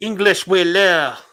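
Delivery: exaggerated French accent, high, shrill and loud. Retelling the bad guys' lines from a movie: imitating a french accent. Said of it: "his typical French accent".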